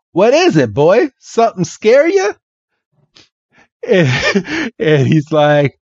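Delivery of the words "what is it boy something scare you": put-on swooping Southern accent, pitched higher. Retelling a scene, the speaker voices Bill talking to Red: Southern accent. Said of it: "try my best to do this Southern accent".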